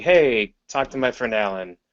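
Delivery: plain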